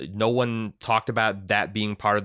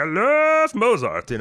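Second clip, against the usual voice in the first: frantic little put-on froggy voice, much higher; 13 semitones higher, 6 dB louder than usual. Describing a movie villain's quirk, the speaker quotes him in a crazy little Kermit voice. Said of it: "this crazy little Kermit voice he slips into".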